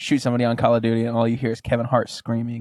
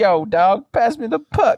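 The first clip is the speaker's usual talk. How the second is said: slow, very high, loud, drawn-out hip-hop hype voice; 11 semitones higher, 5 dB louder than usual. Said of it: "[name] does commentary in it".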